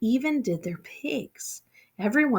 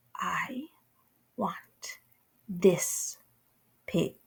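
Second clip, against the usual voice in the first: very quiet, soft voice; 2 semitones lower, 5 dB quieter than usual. A narrator reads the princess facing her father, speaking in a very quiet voice. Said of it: "said in a very quiet voice".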